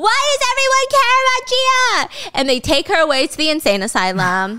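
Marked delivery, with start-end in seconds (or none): 0.0-2.4 mock screeching at a very high pitch, raised. Retelling a drama scene where a woman in prison screams: imitating a scream. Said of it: "And she's screaming".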